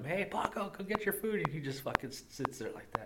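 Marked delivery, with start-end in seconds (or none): 0.0-1.4 acted-out, very high shouted call. Retelling calling the deaf old dog Paco to come eat: imitating own yell at dog. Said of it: "I yell at him".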